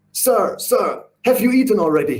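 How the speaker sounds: halting broken English. Recounting a man's first words to him, imitating broken english. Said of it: "he says in broken English".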